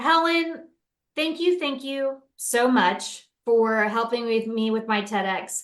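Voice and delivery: emotional, choked up, on the verge of crying. Thanking a guest for help with a talk, emotional, close to tears. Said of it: "I'm actually feeling really emotional and I wanna cry".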